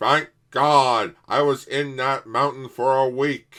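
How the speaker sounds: very loud, high cartoon monster voice. Retelling how a dinosaur monster sounds in a parody: Mister Plinkett voice. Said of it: "he sounds like Mister Plinkett".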